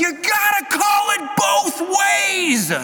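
acted, very slow, very high, drawn-out holler. Retelling a spectator standing up after a missed call, retelling a shout from the stands. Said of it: "stands up from the crowds".

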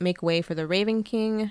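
normal talking voice

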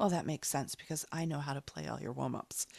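flat, expressionless, low, quiet acted deadpan. Speaker retelling a funny guy's reply, retelling a deadpan reply. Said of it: "A deadpan, he said".

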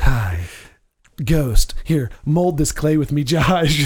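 sultry, sexy voice. Joking about a raspy voice today, playing Demi Moore: Demi Moore sexy voice. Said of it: "my Demi Moore sexy voice".

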